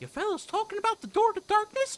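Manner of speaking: high, loud, squeaky voice. Speaker makes a character say dumb lines, in a dumb Mickey Mouse voice. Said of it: "I did a dumb Mickey voice".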